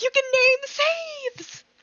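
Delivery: high, slow, dramatic gasping. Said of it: "that's a very dramatic reaction".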